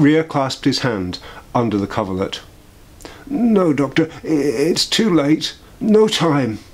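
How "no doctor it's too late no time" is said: breathless, heaving, slow, laboured, pained words. A sick man in bed speaks to the doctor: painfully heaving breath. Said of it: "His breast heaved painfully".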